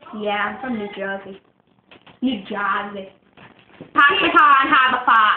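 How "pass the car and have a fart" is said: loud Boston accent with broad vowels. Mocking the famous Boston accent phrase: Boston accent. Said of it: "That's Boston".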